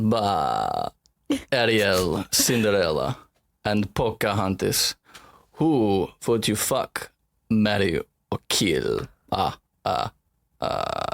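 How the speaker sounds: very slow, dark, swooping put-on vampire drawl. Repeating a guessing-game line as a dark character: vampire voice. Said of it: "should I do it one, one more time?".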